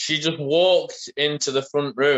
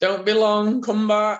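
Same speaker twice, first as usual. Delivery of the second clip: put-on drunk, emotional woman voice, much higher; 6 semitones higher than usual. Retelling what a drunk woman said as the speaker went back in, mock-drunk. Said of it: "She was like being all drunk and feelsy and handsy".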